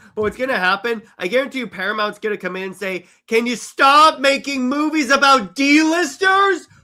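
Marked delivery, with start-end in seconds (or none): 3.3-6.6 acted-out shout, louder. Acting out what Paramount will say about the movies: imitating studio yelling. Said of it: "[name], why are you yelling?".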